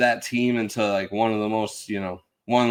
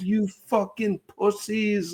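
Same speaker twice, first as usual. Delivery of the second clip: high, furious yell, losing control; 11 semitones higher than usual. Recalling Paul screaming at the TV over an intentional walk, imitating Paul's angry outburst. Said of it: "Paul just crashing the fuck out".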